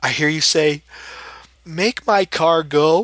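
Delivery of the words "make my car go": softest, most polite meek murmur, very slow. Retelling what Al said while tapping to wake the speaker: imitating Al's meek voice. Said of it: "in the softest, meekest, most polite voice".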